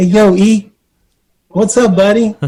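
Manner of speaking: very high-pitched, timid, meek, mild voice. Retelling a call from a man he didn't recognize, imitating a meek, mild voice. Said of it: "a little meek, mild voice".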